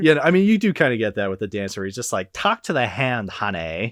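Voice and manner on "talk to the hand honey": put-on lisping voice.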